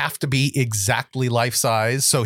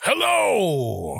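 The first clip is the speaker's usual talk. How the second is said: higher, aggressive straining voice. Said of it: "It was kinda like Santa taking a dump".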